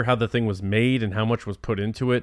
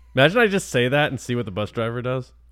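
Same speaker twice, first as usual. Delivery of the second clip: normal talking voice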